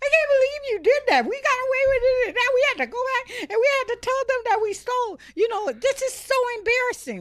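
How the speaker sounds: acted, very high, loud, tearful crying child voice. A parent retelling her kids in the car after a theft, imitating kids crying. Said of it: "they're crying like".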